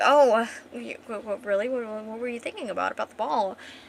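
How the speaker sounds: ordinary delivery, nothing marked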